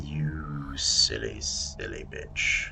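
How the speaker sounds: menacing villain voice, said as an aside.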